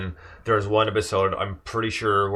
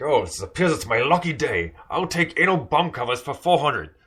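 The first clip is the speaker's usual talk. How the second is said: put-on Scottish accent, slightly raised pitch; 6 semitones higher than usual. Retelling a bit from a show, the speaker does a Sean Connery impression. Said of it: "does such a good impression of Sean Connery".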